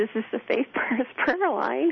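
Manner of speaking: put-on halting voice. Retelling the first time answering the prayer line phone: re-enacting a halting voice. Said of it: "kind of in this halting voice".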